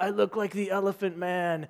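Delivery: put-on British accent, British pronunciation. Retelling what a swollen, bee-stung survivalist said: British accent as Bear Grylls. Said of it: "in his British accent".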